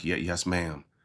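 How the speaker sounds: meek, timid voice.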